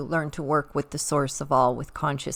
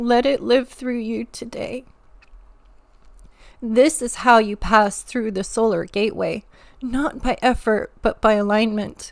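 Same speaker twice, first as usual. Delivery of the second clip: moved, emotional, raised delivery with feeling welling up; 7 semitones higher, 7 dB louder than usual. Speaker closing the transmission to listeners, emotional. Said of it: "sorry, I get emotional sometimes".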